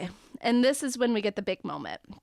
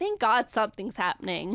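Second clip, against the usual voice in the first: normal talking voice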